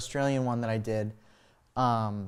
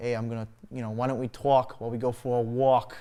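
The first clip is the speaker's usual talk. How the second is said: front-heavy, forward-placed New York accent. Showing how a front-heavy accent sounds: New York accent. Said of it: "something like a New York accent".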